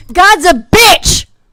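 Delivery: loud, slow, drawn-out yell.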